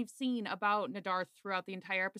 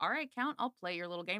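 ordinary delivery

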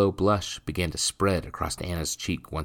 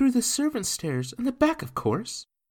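hushed whisper, much higher pitch. She answers his question, whispering. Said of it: "she replied in a whisper".

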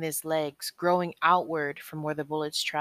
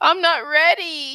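panic-stricken cry, very high and loud; 11 semitones higher, 8 dB louder than usual. Shane, panicking as he thinks of his love Cheryl, panicked cry. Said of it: "Shane cried".

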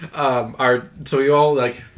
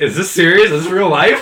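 acted, stunned, loud incredulous disbelief; 4 semitones higher, 7 dB louder than usual. Retelling own reaction to the teacher: retelling own disbelief. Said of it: "I'm like".

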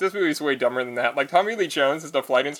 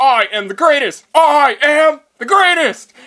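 very loud, high, slow, gleeful boastful crowing; 11 semitones higher, 9 dB louder than usual. Retelling a simulator training scene, imitating Nicolas Cage gleeful boast. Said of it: "He's totally into it".

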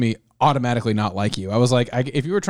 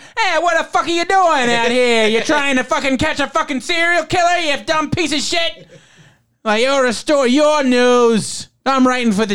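high, loud-mouthed Staten Island thug voice; 13 semitones higher, 4 dB louder than usual. Imitating Stephen Lang going for it in his role, do Freddy Lounds as Staten Island thug. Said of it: "who is this Staten Island thug?".

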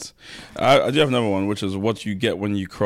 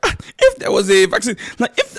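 put-on very high, sing-song, swooping Nigerian accent; 13 semitones higher, 6 dB louder than usual. Teasing a co-speaker by mimicking how she just talked, imitating a nigerian accent. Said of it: "why is she speaking in a Nigerian accent?".

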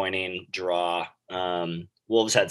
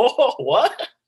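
put-on very high, loud, startled laugh of surprise; 6 dB louder than usual. Retelling a player's reaction to hearing a teammate won man of the match: imitating a surprised laugh. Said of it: "he kind of like laughs like in surprise".

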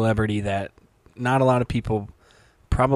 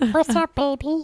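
very high, squeaky voice. Mocking how someone hits on girls, in an Elmo voice. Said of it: "That's Elmo voice that you adopted".

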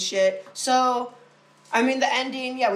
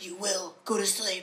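bad put-on old man voice, quieter; 7 dB quieter than usual. Imitating a voice for a guided sleep meditation: Tobin Bell voice. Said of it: "terrible jigs, Tobin Bell impressions".

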